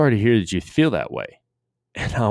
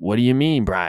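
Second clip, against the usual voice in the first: put-on Maine accent. Retelling how the coach answered Brian's apology, in a Maine accent. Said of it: "he talks in that Maine accent".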